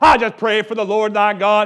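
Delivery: very loud, put-on, pious prayer voice. Speaker tells the audience they don't need one, imitating a prayer voice. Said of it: "Many people have a prayer voice".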